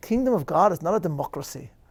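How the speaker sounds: put-on Scottish accent. Quoting a minister's line from a film, in a Scottish accent. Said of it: "in a Scottish accent".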